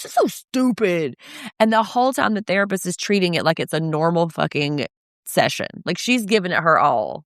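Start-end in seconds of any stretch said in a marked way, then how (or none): 0.0-1.2 mock petulant, angry teenager voice, complaining tone. Retelling a teenager in therapy complaining to his mom: imitating an angry teenager. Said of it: "a mom who was in therapy with her angry teenager".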